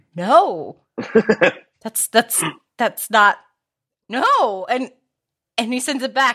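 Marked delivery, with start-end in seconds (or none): 0.2-4.7 mock horrified, stricken tone, much slower. Retelling a group guessing game, playing the person hearing a wrong answer, imitating horror. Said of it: "looks ashen and stricken and horrified and just goes".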